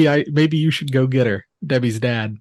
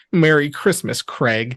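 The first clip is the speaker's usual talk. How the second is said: plain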